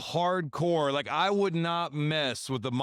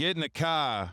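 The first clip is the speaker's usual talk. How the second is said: put-on accent, slightly Rhode Island. Urged to let it roll off the tongue, try out a slight Rhode Island accent. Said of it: "That was a little Rhode Island".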